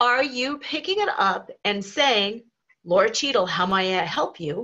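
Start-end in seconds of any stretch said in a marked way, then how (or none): 2.8-4.7 curt, businesslike, abrupt voice, slightly low. Showing how someone answers a work call, in a slightly lower, abrupt tone. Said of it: "With a slightly lower tone to your voice or a more abrupt tone".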